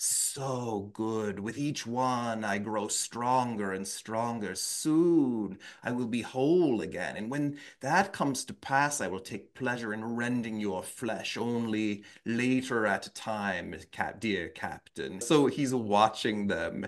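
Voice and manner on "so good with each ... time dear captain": quieter, spooky ghost voice. Quoting a ghost taunting the captain and his people, in a ghost voice. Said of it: "There's like the ghost voice".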